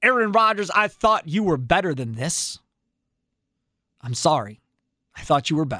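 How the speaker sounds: heavily sarcastic, insincere tone. Showing what a sarcastic apology sounds like: sarcastic apology. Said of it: "My sarcastic apology would be".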